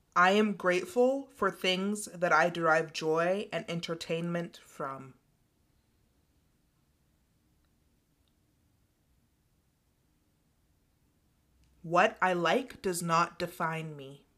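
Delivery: slow, sing-song delivery with pauses. Leading listeners through affirmations so they can repeat, speaking slow, with pauses. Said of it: "I'm gonna speak them slowly and give a pause".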